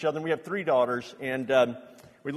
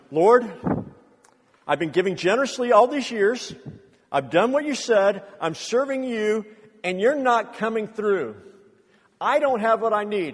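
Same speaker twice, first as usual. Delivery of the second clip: loud, pitched-up angry yell; 5 semitones higher, 6 dB louder than usual. Recalling praying alone in the car, retelling yelling at God. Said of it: "I'm yelling at God".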